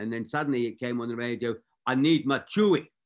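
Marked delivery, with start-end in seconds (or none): 1.8-2.8 loud, very thick Scottish brogue. Recalling a call over the radio during a film, imitating John's thick Scottish accent. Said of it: "he had a very thick Scottish accent".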